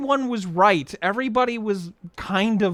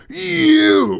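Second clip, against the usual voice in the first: mock seething cartoon-cowboy fury, raised and rough; 7 semitones higher, 8 dB louder than usual. Retelling a scene where Woody turns to Buzz: Woody's rage. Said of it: "you know the rage that Woody has".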